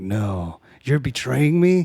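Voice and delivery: acted-out, slow, scared, pleading tone. Retelling a movie scene where the hero is betrayed, imitating a fearful protest. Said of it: "I felt the fear in there".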